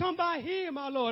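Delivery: full-throated, loud, pleading outcry. Preaching as blind Bartimaeus calling to Jesus: crying out loudly. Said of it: "I'm crying out".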